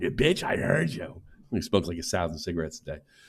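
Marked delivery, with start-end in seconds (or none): 0.0-1.2 hoarse, raspy, gritty rasped-out voice. Friend mimicking how the storyteller said a line, imitating a raspy voice. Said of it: "her voice got all raspy and shit".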